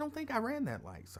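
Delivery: high, soft, polite voice. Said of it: "I remember using my polite voice".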